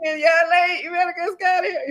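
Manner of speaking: play-acted screaming. Retelling how everybody tells her late husband to leave: imitating people screaming.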